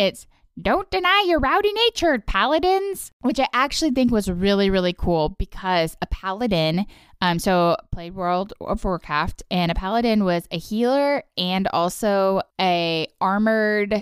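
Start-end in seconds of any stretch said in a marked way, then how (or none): 0.6-3.1 put-on old woman's voice, very high-pitched. Doing an impression of a line from the episode: old lady impression. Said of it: "my impression is the old lady also".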